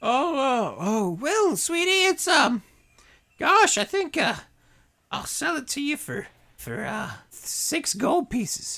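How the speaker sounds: crone-like merchant voice. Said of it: "How much for these three pieces of wood?".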